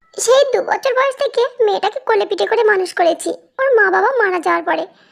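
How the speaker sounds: plain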